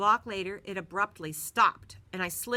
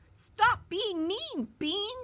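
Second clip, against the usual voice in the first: very high, drawn-out, mouse-squeak yell; 13 semitones higher than usual. The narrator leaps onto a bully's leg and yells at him; squeaky yell. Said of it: "I yelled at the top of my squeaky voice".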